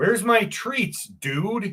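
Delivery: irritated, mad, demanding dog voice. Voicing the dog who is waiting for treats: voicing a mad Tigger. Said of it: "He is so mad when he, he's like".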